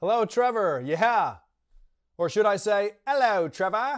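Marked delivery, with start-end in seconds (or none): 3.1-4.0 put-on British accent. Greeting the host as the royal family's new diversity czar, in a British accent. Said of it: "(with British accent)".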